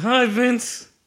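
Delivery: very high-pitched, forced through clenched, gritted teeth. Retelling greeting a man who snuck up behind him, through gritted teeth. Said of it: "Through gritted teeth".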